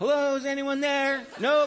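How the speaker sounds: put-on very high, piping, cheery child voice. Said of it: "He started imitating me".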